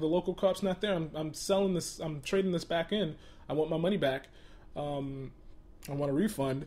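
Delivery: ordinary delivery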